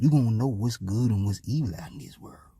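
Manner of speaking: low unvoiced tempting whisper.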